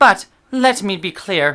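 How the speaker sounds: put-on accent suddenly sounding Irish. Reading out a quote from Rowling, accent suddenly sounding Irish. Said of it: "Suddenly became Irish here".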